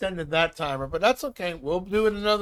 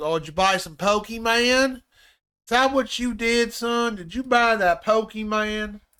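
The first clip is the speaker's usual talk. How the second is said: put-on country accent throughout; 3 semitones higher than usual. Talking to William during a game, in a put-on country accent. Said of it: "I said it with a country accent".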